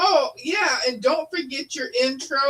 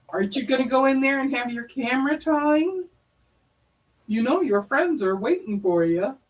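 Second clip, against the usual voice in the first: playful, ribbing, coaxing teasing tone. Retelling what her dad says to her about camera time: imitating someone teasing. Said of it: "Her dad's always teasing her, going".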